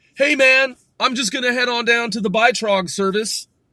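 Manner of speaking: enunciated American inflection. Speaker, prompted to say the name in English, uses enunciated American inflection. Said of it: "with the American like inflection enunciated".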